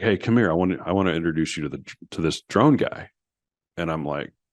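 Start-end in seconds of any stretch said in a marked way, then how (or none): none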